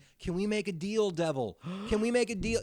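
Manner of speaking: a man's high, loud hollering yell. Retelling how a dazed man woke up after a crash: imitating a man yelling. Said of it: "he starts yelling this".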